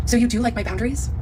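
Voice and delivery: normal talking voice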